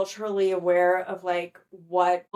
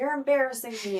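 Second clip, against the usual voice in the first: mock upset, frantic, freaking-out father voice outburst; 4 semitones higher than usual. Retelling a scene where a father at dinner is freaking out: imitating a father freaking out. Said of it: "freaking out and is just like".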